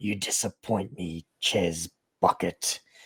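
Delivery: low, throaty, rasping growl. Describing a voice heard clearly through the levels of the mind, in a throaty raspy growl. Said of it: "this throaty, raspy voice begins to to talk".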